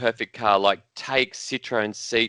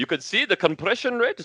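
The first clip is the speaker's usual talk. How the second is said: put-on German accent, pitched higher; 9 semitones higher than usual. Describing a slide presentation on how the seats were made; German accent. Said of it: "I'm doing a German accent".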